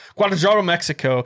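very fast, blurted, rattled off in one rush. Announcing a conference location, saying the place name really fast. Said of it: "I'm going to say it really fast".

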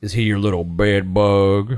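deep, very low put-on Southern accent. Quoting a courtroom line from a movie: John Goodman Southern lawyer voice.

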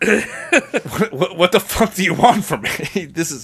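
exasperated mob boss voice. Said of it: "And Mickey's like".

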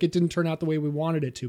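ordinary talk, nothing marked

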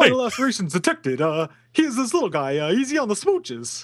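put-on high, deliberately poor old-time fifties New York voice. Trying out a line to see who does a better Rodney Dangerfield: bad Rodney Dangerfield impression. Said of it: "which one of us does a better Rodney Dangerfield?".

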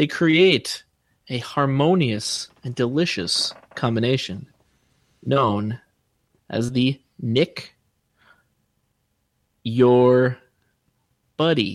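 very slow, drawn-out, halting, broken phrasing. Nick finishes his pitch while the others listen, said very slowly. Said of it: "Why do you say it all slow like that".

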